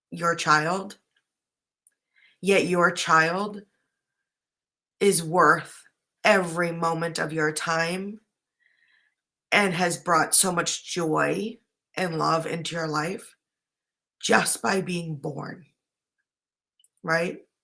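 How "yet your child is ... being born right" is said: tearing up, close to tears. Speaking to a parent about their child's worth, getting teary-eyed. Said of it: "I'm getting teary-eyed just saying that".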